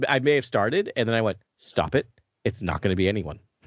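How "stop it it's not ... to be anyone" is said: usual speaking voice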